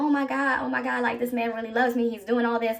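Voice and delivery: put-on tearful, crying voice. Retelling own words at a surprise proposal: retelling own crying. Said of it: "And I'm sitting there crying".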